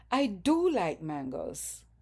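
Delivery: heavy stress leaning on do. Teaching emphatic do in speech: stress on do. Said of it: "the do is stressed. There's stress on the do".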